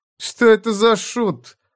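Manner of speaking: very high, revolted, drawn-out, lingering disgust. One gentleman asks another about the man, with visible disgust. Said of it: "с видимым отвращением спросил".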